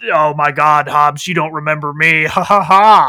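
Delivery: put-on badly distorted villain voice. Retelling a movie scene of a villain speaking from a helicopter: imitating a poorly voice-changed villain voice. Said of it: "really poorly voice-changed voice is speaking out of the helicopter".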